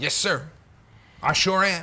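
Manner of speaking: put-on American accent. Acting out police officers accepting an order, in a put-on american accent. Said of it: "I put on the American accent".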